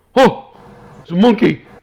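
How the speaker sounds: put-on very high, very loud, severely drunken slur. Voicing a drunk armored guard who snaps awake: severely drunk guard voice. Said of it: "severely drunk".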